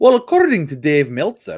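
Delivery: put-on Irish-UK accent. Speaker mocks WhatCulture Wrestling, in a weird WhatCulture Wrestling Irish-UK accent. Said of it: "that weird fucking choochaholic fucking Irish UK".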